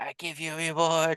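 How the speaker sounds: put-on old beggar voice, high and slow. Showing the impression again as the disguised old man: Jafar disguised as old beggar. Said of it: "Jafar masquerading as a hobo".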